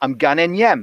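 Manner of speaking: Newcastle Geordie accent and dialect. Speaker explains dialect versus accent, giving an example: saying it in Geordie dialect. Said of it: "you were to say it in Geordie dialect".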